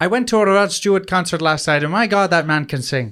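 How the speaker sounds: mild Dublin Irish accent. On a podcast, a speaker tries out accents, doing a Dublin Irish accent. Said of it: "It's like a Dublin accent".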